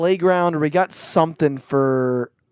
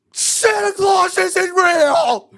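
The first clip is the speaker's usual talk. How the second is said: put-on scream, higher; 4 dB louder than usual. Retelling discovering the truth as a child: imitating own past screaming. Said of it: "And I'm, like, screaming".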